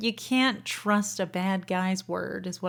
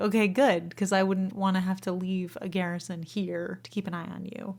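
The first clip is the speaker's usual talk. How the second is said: usual speaking voice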